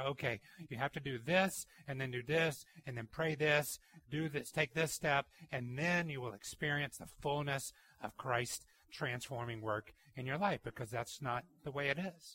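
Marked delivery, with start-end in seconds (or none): none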